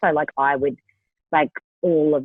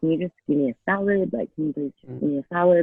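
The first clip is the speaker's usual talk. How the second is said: imitated whisper. Retelling asking quietly into a mic for a salad: retelling a whisper. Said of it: "I literally was whispering into my mic".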